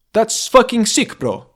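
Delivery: Swedish accent. A CS player showing how a Swedish teammate would say a phrase: Swedish accent. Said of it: "That's the way a Swedish person would say it".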